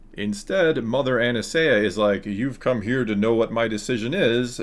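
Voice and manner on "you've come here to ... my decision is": usual speaking voice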